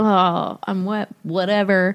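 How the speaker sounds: acted muttering under breath. Retelling the scene where Ron mutters after the crowd enters: Ron muttering under his breath. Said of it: "Ron is muttering under his breath".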